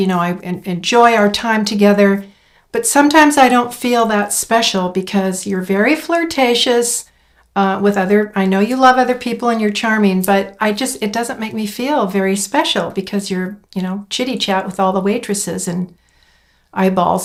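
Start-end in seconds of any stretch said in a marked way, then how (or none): none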